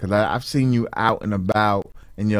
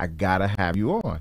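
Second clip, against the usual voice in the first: plain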